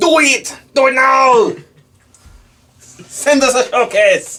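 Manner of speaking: put-on, very high, very loud, shrill Austrian accent. A podcast host calls on listeners to send in their work, in an austrian accent. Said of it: "an Austrian accent".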